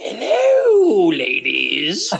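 put-on cackling, high, swooping old crone voice, hello stretched out. A dad running an RPG for his kids voices a shopkeeper: old crone shopkeeper voice. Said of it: "like you have the old crone shopkeepers like".

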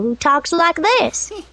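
put-on cheerful-sounding kids' show helper character voice. Voice actor demoing her Mr. Men show characters, Little Miss Helpful voice. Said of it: "And Little Miss Helpful".

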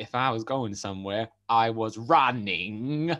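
bad, stiff robotic voice, very slow. Quoting a line the film character says weirdly: bad robotic Forrest Gump impression. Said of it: "It was a bit robotic".

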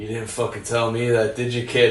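relaxed, slumped movie-star voice. Retelling an anecdote about a film premiere: Harrison Ford impression. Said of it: "he does the best Harrison Ford".

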